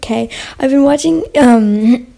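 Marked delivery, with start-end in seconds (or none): 1.4-2.0 sudden hoarse voice crack. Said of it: "It went hoarse".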